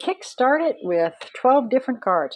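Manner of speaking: sarcastic overstatement. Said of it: "I'm being sarcastic".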